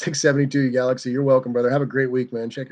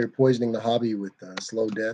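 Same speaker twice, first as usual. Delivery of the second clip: usual speaking voice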